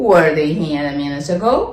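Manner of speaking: gentle, slight pitch rise at the end on ago. English lesson on questions with the verb first, slight rise at the end. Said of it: "Eu estou fazendo uma pergunta, entonação um pouquinho para cima".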